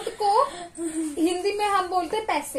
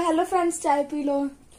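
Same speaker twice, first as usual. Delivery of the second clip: ordinary talk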